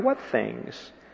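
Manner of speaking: soft, very quiet delivery.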